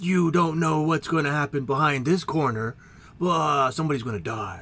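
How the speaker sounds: put-on 80s announcer-guy voice. Imitate the one guy doing every announcing voice in the 80s, in an 80s announcer voice. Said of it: "exact same guy doing exactly every single announcing voice".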